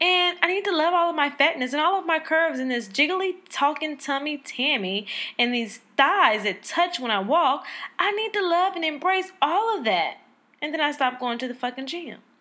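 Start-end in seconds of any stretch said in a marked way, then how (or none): 0.0-10.2 high, sing-song, encouraging voice. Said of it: "But then I'm like".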